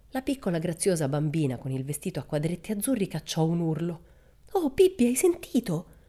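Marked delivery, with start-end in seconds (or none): 4.5-5.8 scared, frightened, whimpering voice, pitched up. A narrator reads a little girl's cry to Pippi: frightened whimper. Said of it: "gemette con voce impaurita".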